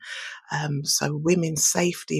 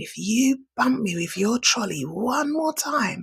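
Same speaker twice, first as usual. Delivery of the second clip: big man's high, shouted yell; 7 semitones higher than usual. Retelling a stranger in a shop queue, imitating a man shouting. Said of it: "he started shouting at me".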